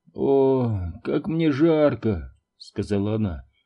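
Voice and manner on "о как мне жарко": very slow moan, "o" stretched long. A narrator reads a sick mother rolling over in bed: groaning. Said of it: "перевернулась и застонала".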